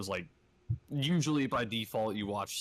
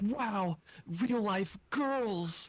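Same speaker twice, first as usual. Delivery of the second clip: put-on very high, pushed-up, boyish anime hero voice; 11 semitones higher than usual. Retelling a video of a guy in LA seeing girls on the sidewalk, in Deku voice. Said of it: "doing the fucking Deku voice".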